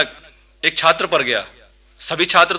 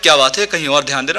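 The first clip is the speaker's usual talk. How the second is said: ordinary talk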